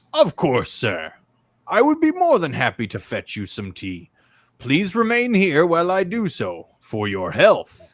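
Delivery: sing-song clockwork robot butler voice. Voicing a clockwork butler agreeing to fetch tea: clockwork butler voice. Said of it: "this clockwork butler".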